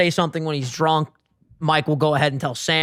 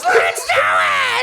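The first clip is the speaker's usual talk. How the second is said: high, slow, shouted war cry. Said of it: "and then goes".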